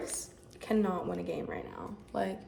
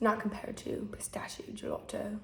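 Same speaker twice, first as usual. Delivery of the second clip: put-on British accent; 3 dB quieter than usual. Before introducing today's bake, speaking in a put-on British accent. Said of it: "I'm gonna stop speaking in a British accent now".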